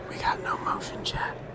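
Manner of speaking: whispered speech. Remarking to chat that the group got no motion: whispering. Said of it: "'cause he whispered it".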